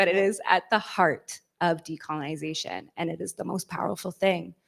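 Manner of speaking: emotional, choked-up voice catching. Speaker wrapping up her answer before passing to the next speaker, getting choked up. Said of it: "I'm getting choked up".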